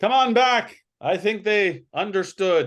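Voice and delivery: booming, very high shout. A voice calls from inside the camp after two figures hobbling away, booming voice. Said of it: "you all hear this voice booming".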